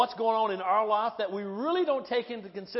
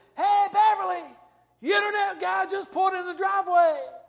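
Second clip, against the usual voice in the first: very high, shrill, raised yell, acted out; 9 semitones higher, 5 dB louder than usual. Retelling how dad yelled across the house to mom: imitating a yell. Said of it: "he yells back at my mom".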